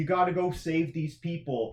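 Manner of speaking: ordinary delivery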